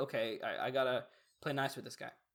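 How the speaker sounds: ordinary delivery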